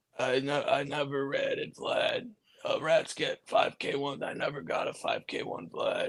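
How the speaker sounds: loaded, slow, gravelly, breathy near-whisper. Imitating a man who sounded loaded in an interview: imitating a loaded man's gravelly voice. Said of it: "He's talking like that".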